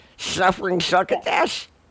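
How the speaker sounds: put-on lisping cartoon voice. Imitating a cartoon character's catchphrase: Sylvester voice with double lisp. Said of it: "the double lisp".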